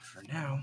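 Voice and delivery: hushed, very quiet mutter under breath. Voicing a character who mutters a threat while walking away: muttering under his breath. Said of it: "hear Alwyn mutter under his breath".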